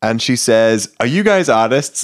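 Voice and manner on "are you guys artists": knowing, half-accusing tone, pitched up. Retelling how the gallery attendant questioned them: imitating a knowing, accusatory tone. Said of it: "kind of in a knowing slash accusatory".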